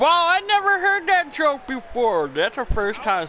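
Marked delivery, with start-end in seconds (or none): 0.0-2.3 raised, very high, swooping voice. Reacting after realizing the joke was told wrong, in a raised voice. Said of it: "Sorry for raising my voice".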